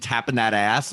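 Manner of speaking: ordinary talk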